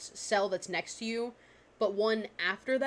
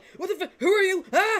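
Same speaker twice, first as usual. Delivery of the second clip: startled goblin voice, much higher, louder; 9 semitones higher, 9 dB louder than usual. Narrator voicing a small green goblin that suddenly shoots up, startled goblin voice. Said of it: "3-foot green goblin, like, instantly, like, shoots up".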